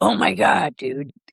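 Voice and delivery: slow, creaky drawl in dude-speak. Retelling how a friend raved about a record store worker: imitating a friend's way of talking. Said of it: "'Cause that's how she talks".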